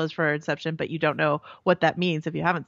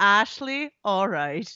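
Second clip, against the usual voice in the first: put-on thick Irish accent; 2 semitones higher than usual. Retelling a scene with Coughlin, imitating Coughlin's thick Irish accent. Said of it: "He has a thick Irish accent".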